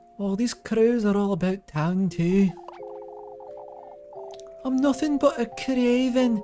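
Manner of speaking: put-on Scottish character voice. Voicing the character Freya, in a Roderica voice but more Scottish. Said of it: "I'm trying to subconsciously voice Freya as like uh Roderica from Elden Ring, but more Scottish".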